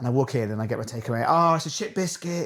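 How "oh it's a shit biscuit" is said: acted, high-pitched screaming voice. Retelling a local chef in his kitchen: imitating someone screaming. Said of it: "He's screaming in the kitchen".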